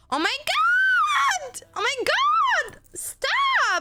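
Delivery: very high, very slow, drawn-out, spoiled-brat scream. Describing how their partner Dante screams, imitating Dante's bratty scream. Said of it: "Sometimes when Dante screams, he just turns into like a little brat".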